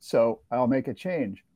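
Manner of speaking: normal talking voice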